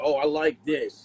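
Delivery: ordinary talk, nothing marked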